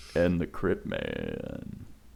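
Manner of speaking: put-on deep voice, very low and quiet. Introducing a podcast co-host by nickname, deep voice mode. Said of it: "go into deep voice mode when I say your".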